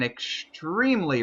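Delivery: the word extremely punched with heavy stress. Commenting on a driver's rough start to the season: stress on EXTREMELY. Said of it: "I really put the emphasis on the word extreme".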